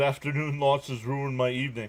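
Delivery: ordinary talk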